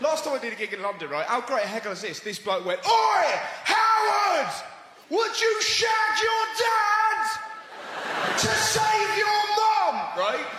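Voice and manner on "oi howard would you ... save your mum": very high, very slow, drawn-out hostile jeering. Comedian recounting a heckle from a bloke at a london gig, imitating an aggressive heckler. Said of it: "He was so aggressive".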